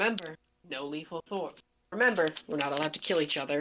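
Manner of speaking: dropped very low, quiet, hushed voice. Looking at him, the character reminds him they may not kill each other; lowered voice. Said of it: "just lower my voice and just say".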